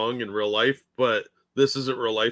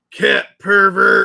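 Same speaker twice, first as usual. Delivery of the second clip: loud, rough, raspy barking voice, pitched up; 8 semitones higher, 11 dB louder than usual. Granting a request for an impression despite doubting it, in a Rudy Giuliani voice. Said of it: "That's that's the best I could do for Giuliani".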